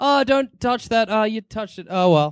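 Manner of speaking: offhand, unbothered tone. Imitating Gene Wilder's Wonka watching a child touch things: Gene Wilder Wonka impression. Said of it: "Wilder doesn't give a fuck".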